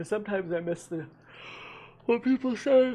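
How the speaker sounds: speaking through a yawn. Talking to the audience, yawning while talking. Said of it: "I'm yawning".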